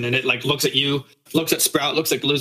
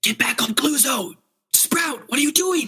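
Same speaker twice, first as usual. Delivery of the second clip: very high, loud stage whisper; 12 semitones higher than usual. A character steps out from behind a tree to call to a companion, whisper-shouting. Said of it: "whisper shout at you".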